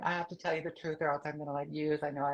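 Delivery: tearful, crying, pleading voice. Retelling running downstairs to confess the truth: retelling own crying. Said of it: "I came running downstairs and I'm crying".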